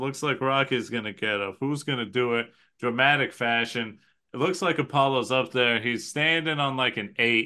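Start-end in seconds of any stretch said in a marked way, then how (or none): none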